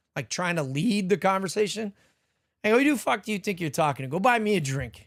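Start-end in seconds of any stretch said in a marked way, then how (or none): 2.8-4.8 rude, disrespectful tone. Retelling a rude retort to a woman at a club: imitating own disrespectful reply. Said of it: "I said it like that".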